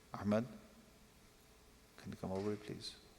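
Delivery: low whisper. Demonstrating calling someone over in a low, quiet voice. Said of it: "instead of talking, ah, you do this, you do this. ... If you lower your voice, it's deadly".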